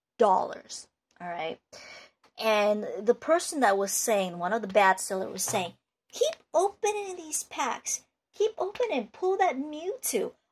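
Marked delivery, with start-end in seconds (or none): 6.1-10.3 really high-pitched, insistent salesperson-style urging. Mimicking a bad seller of card packs, in a really high voice. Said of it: "That's just my really high voice".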